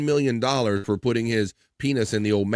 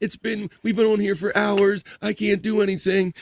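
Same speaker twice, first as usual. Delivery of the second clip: mocking fake groaning of pain, pitched higher; 9 semitones higher than usual. Mocking Perry's complaints of pain: imitating Perry's fake pain moans. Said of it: "he's full of shit with all the".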